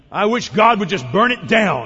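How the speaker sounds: put-on blunt snorting voice. Speaker quotes a man's judgment of a church, retelling a snorted verdict. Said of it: "snorted out a simple, direct sort of summary judgment".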